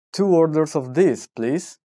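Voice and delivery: plain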